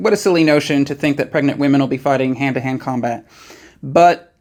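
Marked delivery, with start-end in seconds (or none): none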